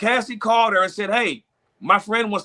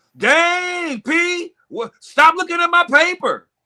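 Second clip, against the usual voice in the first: mock, very slow, loud, high, drawn-out complaining; 9 semitones higher than usual. Retelling how a classmate catches someone cheating: imitating a loud classmate. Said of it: "gets all loud and says".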